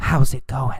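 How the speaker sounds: hushed, breathy whisper. Explaining yell versus whisper, repeating the greeting in a whisper. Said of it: "Or did he whisper".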